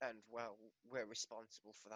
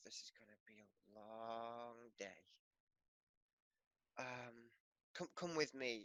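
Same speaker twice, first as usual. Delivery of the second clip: muttering quietly under breath. Voicing an elderly-ish human who asks a newcomer to follow: muttering under his breath. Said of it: "he sighs heavily and says under his breath".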